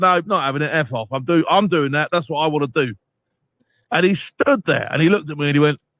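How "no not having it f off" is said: usual speaking voice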